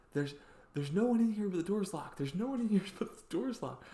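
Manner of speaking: mock yelling. Retelling how a stranger yelled to store employees: imitating someone yelling. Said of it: "yelling to what is clearly Target employees".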